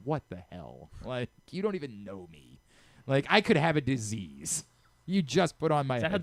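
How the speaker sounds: play-acted pissed-off, angry, indignant ranting outburst. Retelling how a friend reacted to a stranger using her headphones: imitating an angry friend. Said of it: "she would get so pissed off".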